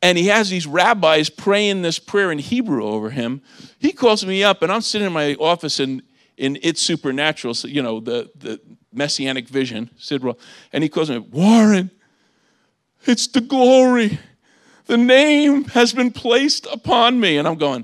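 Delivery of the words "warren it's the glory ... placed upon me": high, slow, weeping, tear-filled voice. Retelling a friend's phone call from Israel, imitating a friend crying. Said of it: "He's crying".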